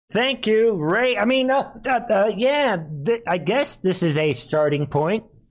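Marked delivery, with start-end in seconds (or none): 0.1-1.1 placating, peacemaker voice. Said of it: "He's trying to sound like the peacemaker".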